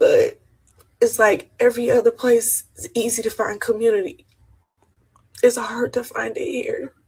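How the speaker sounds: close to tears, crying voice. A tourist in São Paulo talks to the listeners, crying. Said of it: "And I don't even know why I'm crying".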